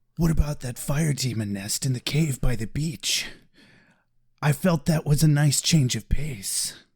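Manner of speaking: low, heavy, brooding put-on voice. Told by a co-host to redo the line properly: mock-broody Angel voice. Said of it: "I need to get into my broody mode".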